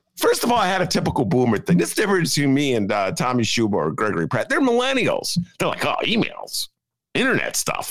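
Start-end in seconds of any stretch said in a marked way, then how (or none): 5.9-8.0 casual, dismissive, offhand millennial voice, pitched up. Confessing a boomer habit about emails, the speaker does an impression of millennials. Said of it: "that's the latest impression in the [name] catalog".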